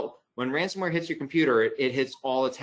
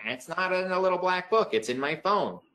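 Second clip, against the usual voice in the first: mocking imitation voice; 5 semitones higher than usual. Speaker giving password advice imitates what people say: imitating people's voice. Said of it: "That's my imitation voice there".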